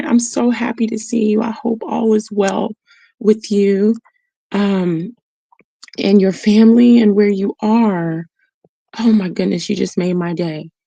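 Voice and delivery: voice welling up, close to tears. Speaker greets someone they are glad to see, on the verge of tears. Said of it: "I think I'm gonna cry".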